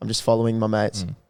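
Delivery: put-on bored tone. Showing how to answer security at a club: acting bored. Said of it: "sound bored".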